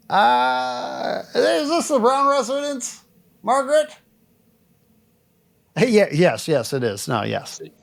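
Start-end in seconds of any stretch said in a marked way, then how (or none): 0.1-6.0 put-on pitched-up old man voice. Playing the homeowner answering a visitor at the door: old man voice. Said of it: "I'm gonna do an old man".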